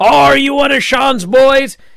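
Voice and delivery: shrill, high, loud angry shout. Recapping a wrestling storyline, the speaker acts out a wrestler yelling at Tyler Bate. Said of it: "he's yelling at Tyler Bate".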